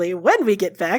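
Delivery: very optimistic, upbeat and hopeful. Voicing a character about to leave for battle: very optimistic. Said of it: "he says, very optimistically".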